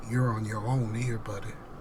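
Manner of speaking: very menacing, threatening, low and hushed tone. Retelling what a man at work said after hearing his vote, imitating a menacing tone. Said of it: "in a very menacing tone".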